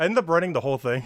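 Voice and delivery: out of breath. Talking while playing old school RuneScape, out of breath. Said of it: "why am I so out of breath?".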